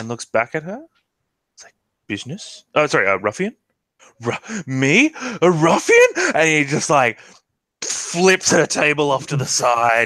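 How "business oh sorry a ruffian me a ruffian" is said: disbelieving, incredulous, high and swooping voice. Storyteller voicing Lug answering a woman at her table: Lug, incredulous. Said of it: "and like incredulous".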